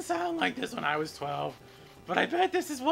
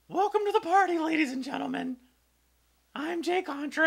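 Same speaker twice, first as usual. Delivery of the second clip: put-on twelve-year-old voice, cracking, higher; 4 semitones higher than usual. Greeting viewers at the start: put-on twelve-year-old voice with voice breaking. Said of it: "I've adopted what I feel like I would have sounded like when I was twelve years old".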